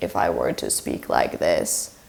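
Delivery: vocal fry, creaky and breathy edge. Explaining voice types, showing what it sounds like, creaky voice. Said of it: "that is creaky voice".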